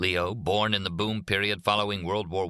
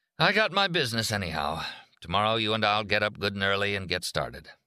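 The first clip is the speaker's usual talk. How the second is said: usual speaking voice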